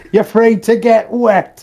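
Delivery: acted, high, full-voiced shout. Speaker recalls watching Pirates of the Caribbean with a mate; retelling Davy Jones shout. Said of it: "Davy Jones just shouts".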